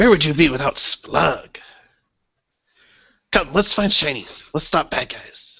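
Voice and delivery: high-pitched goblin voice. Voicing a character grinning down into a pit, voicing Splug the goblin. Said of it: "a grinning green face at the top".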